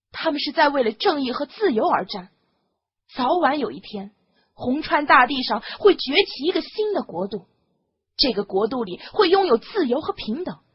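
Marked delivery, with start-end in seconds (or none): none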